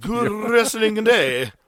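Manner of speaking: put-on British gentleman accent, high, loud. Showing the voice meant for the sign-off line: put-on astute british man voice. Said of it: "astute British man".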